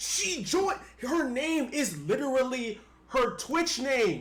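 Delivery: very loud, shrill, booming, high-pitched, drawn-out yelling. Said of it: "Why are y'all yelling at each other?".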